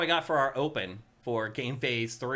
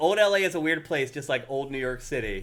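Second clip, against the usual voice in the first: ordinary talk, nothing marked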